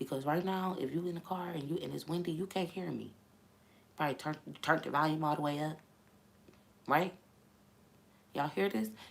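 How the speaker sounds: talking in a very low voice. Addressing the audience to show how they talk, talking very low. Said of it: "Y'all hear how low I'm talking?".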